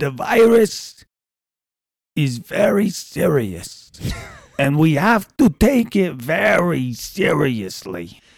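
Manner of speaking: put-on voice, high-pitched, grave and heavily serious. Told to go ahead, doing a serious Fauci voice. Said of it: "I can do a serious Fauci voice".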